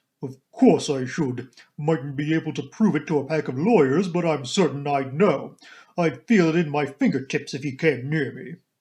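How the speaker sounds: deep, booming, stentorian, almost manly voice. Narrating a story, voicing a woman answering the narrator: deep, almost manly stentorian voice. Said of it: "She was a pleasant-looking woman of about 40, with a deep voice almost manly in its stentorian tones, and had a large, sensible, square body with feet to match, these last encased in good thick boots".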